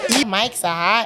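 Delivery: trashy New Jersey Italian accent. Acting out a quoted line for the listeners: New Jersey trash Italian accent. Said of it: "New Jersey trash Italian accent".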